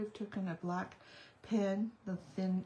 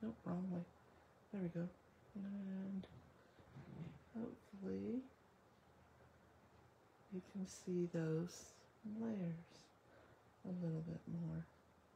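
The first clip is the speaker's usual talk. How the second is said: very quiet, soft, low talking; 10 dB quieter than usual. Showing a craft project to viewers on camera: talking low. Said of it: "I'm talking low".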